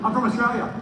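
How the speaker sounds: loud, high-pitched yelling.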